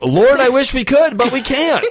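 high-pitched shouting.

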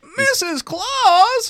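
very high and loud voice. Greeting Missus Claus in character: voice like Don Knotts. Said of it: "Why do I sound like Don Knotts".

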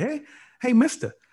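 mock starstruck fan voice, very high and eager. Retelling meeting celebrities at a bar, imitating an eager fan calling out. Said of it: "I ain't about to be running up like".

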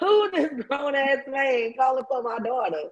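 high, disapproving, protective father's voice. Retelling how dad reacted to a caller's deep voice: imitating dad not having it. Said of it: "My dad was like".

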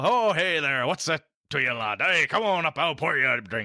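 cartoonish, goofy bartender voice. Showing how they play a bartender character who greets a lad: goofy bartender voice. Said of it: "He's a goofy dude".

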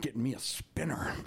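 mumbled speech with no front teeth. Retelling what a huge guy said, imitating toothless speech. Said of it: "no teeth in the front, so that's why he talked like this".

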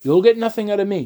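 with a sneer. Refusing to be an informant, a character answers his questioner, sneering. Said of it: "Brack sneered".

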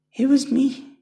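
very high, crazed, maniacal cackling laugh. A woman answers the fighter who accuses her; cackling maniacally. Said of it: "the woman cackled, laughing maniacally".

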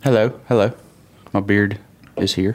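English-accented voice. Podcast guest being introduced greets the hosts in a put-on English accent. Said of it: "English accent, huh?".

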